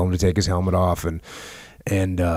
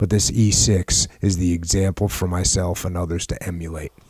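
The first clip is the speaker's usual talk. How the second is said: normal talking voice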